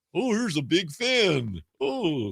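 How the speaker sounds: very slow, drawn-out, swooping cartoon commercial voice. Imitating the talking candy from an m&m's commercial: m&m's commercial voice. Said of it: "you sound like Grimace or something".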